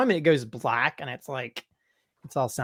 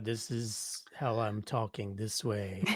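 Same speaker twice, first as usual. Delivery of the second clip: flat, level, unchanging monotone drone; 4 semitones lower, 11 dB quieter than usual. Describing how they talk, the speaker demonstrates it in a flat monotone delivery. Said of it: "monotone at times where they".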